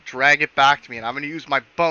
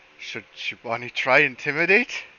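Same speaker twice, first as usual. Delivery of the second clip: hushed, secretive half-whisper. Voicing Shiwani asking the rest of the party a question: half-whispering to the party. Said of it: "basically whispers to them".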